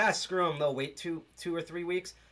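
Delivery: ordinary delivery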